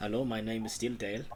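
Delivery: fake, put-on German accent. Voicing a bartender named dale in a role-play game: german accent. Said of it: "Now I'm German".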